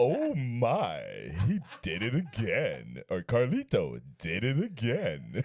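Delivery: deep, very slow voice drawing every word out. Redoing a soundbite line after being asked: George Takei voice. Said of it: "you gotta do it in the George Takei voice".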